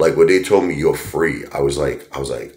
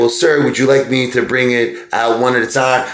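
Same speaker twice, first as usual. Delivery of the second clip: very high, raised nerdy waiter voice; 10 semitones higher, 5 dB louder than usual. Retelling how a waiter greeted him: imitating a nerdy waiter. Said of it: "this, like, nerdy, you know, guy".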